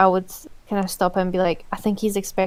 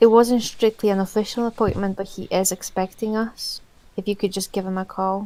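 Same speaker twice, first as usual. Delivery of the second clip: confiding stage whisper. Leaning forward to the clerk at the desk about an appointment, almost half whisper. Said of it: "kind of almost half whisper".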